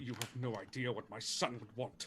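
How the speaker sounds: resentful retort, thrown back. Voicing a father scowling at Mordecai after persuasion: scowling retort. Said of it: "and scowl".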